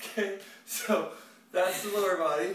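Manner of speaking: out of breath, puffing, slow, slightly high. Finishing a lower-body workout set, out of breath. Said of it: "I'm already winded".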